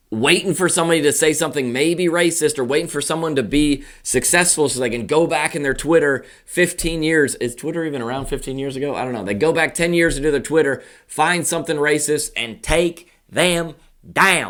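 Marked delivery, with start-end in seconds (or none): 9.2-14.5 Southern American accent. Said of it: "I had a southern accent when I said that".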